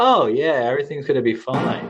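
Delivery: sarcastic, too-easy tone with swooping tune. Retelling his reply to a woman who will be away for a month, retelling a sarcastic, smiling reply. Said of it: "kind of smiling, you know, sarcastically".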